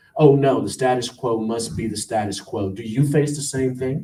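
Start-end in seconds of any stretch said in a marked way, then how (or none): none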